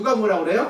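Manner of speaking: ordinary talk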